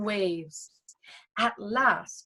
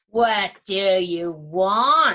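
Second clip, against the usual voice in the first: low, grinding voice like stones, "want" drawn out; 4 semitones lower, 4 dB louder than usual. Reading a fairy tale, the narrator voices the Troll Queen questioning Asta: voice like grinding stones. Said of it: "she asked in a voice like grinding stones".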